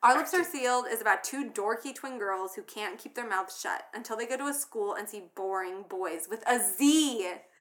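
normal talking voice

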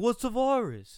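very high, loud shout like a TV chef. Imitating a film director dismissing the pandemic: Nolan impression like Gordon Ramsay. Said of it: "That's my impression of him".

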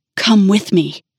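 whispering harshly. A man tries to pull a woman toward him; harsh whisper. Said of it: "he whispered harshly".

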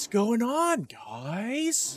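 terrible, swooping acted delivery with guys drawn out. Complaining about an actor who was terrible at his lines, imitating his line delivery. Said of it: "the way he delivered lines was like".

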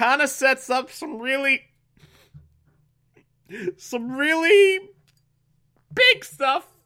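very high voice, on the verge of tears. Recapping story events, near tears. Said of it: "I'm crying already".

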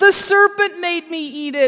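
emphatic exclamation. Reading a creation story, the woman answers God's question: exclaiming. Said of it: "exclaimed Eve".

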